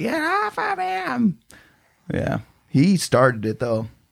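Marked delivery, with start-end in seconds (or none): 0.0-1.4 very high, slow mock yell. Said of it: "she was just yelling".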